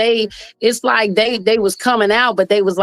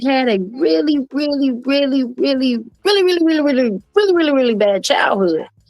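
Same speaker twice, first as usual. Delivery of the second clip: put-on high little baby voice like a small child; 5 semitones higher than usual. Retelling how a woman suddenly started talking like a baby, imitating her baby voice. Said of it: "she started talking like a baby".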